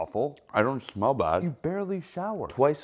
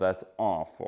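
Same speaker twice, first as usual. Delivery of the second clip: sarcastic sympathetic tone, lower; 5 semitones lower than usual. Reacting to news that friends had tragedies: sarcastic-sounding sympathy. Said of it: "you really don't hear it, do you?".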